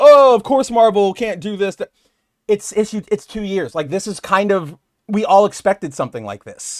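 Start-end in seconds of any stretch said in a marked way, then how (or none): 0.0-1.7 louder, higher whiny voice. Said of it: "whining and going".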